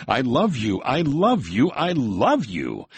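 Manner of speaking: plain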